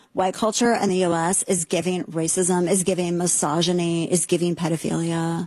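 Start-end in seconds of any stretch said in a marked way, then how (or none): none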